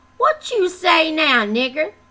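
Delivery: high, mocking, goading, jeering taunt. A man speaks to the narrator's humiliated cousin: taunting. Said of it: "Taunted Stuart".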